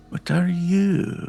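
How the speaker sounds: put-on Scottish accent. Voicing a character asking a glowing thread what it is: fake Scottish Mrs. Doubtfire accent. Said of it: "fake Scottish Missus Doubtfire accent".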